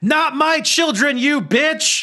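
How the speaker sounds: very high-pitched, drawn-out character yell. Voicing a character who stabs a creature: yelling in character. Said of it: "and she yells".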